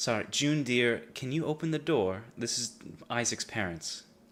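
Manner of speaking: nicer, courteous, sweet polite tone. In a role-play, parents at the door redo their line when told, saying it nicer. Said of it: "Say it nicer".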